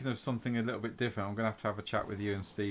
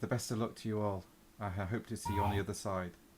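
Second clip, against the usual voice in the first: very quiet, soft, hushed, near murmur; 6 dB quieter than usual. Game narrator voices Morgana's parting words to the three players, really quiet voice. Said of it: "she says in in a really quiet voice".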